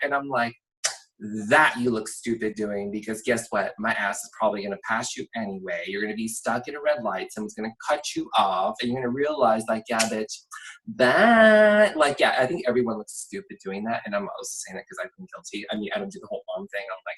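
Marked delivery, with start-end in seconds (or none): none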